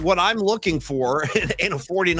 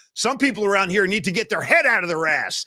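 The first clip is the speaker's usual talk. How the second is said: put-on coach scolding at talking level; 2 semitones higher than usual. Retelling a mic'd-up clip of Bill Parcells yelling at a player: imitating Bill Parcells yelling. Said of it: "And he's yelling at".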